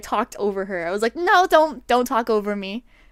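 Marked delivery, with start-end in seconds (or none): 1.2-2.8 loud raised voice cutting in. Retelling talking over someone who interrupted, imitating own louder voice. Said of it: "I just got louder".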